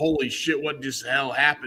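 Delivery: giddy laugh-talk, laughing through the words. Picturing a wrestler rolling out of the ring holding the belt: MJF laughing while talking. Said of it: "just laughing, going".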